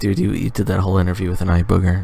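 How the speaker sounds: put-on whisper. Voicing people in the scene who are whispering to each other: imitating people whispering. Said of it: "They're all whispering right now".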